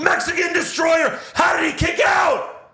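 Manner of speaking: put-on very high, shrill, excited commentator yell. Retelling a commentator's reaction to a kickout: imitating Tessitore yelling.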